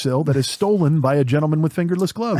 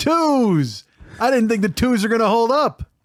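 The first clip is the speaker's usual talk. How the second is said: raised pitch with the word twos drawn out long; 6 semitones higher than usual. Doing an impression of a loud friend playing poker on Zoom: Bill Dwyer impression. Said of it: "I'm gonna do an impression of Bill Dwyer".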